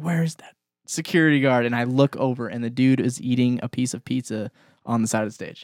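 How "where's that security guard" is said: high, urgent, alarmed scream. Recounting a girl's fall, asking where the security guard was: retelling a scream. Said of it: "I'm screaming and I'm like".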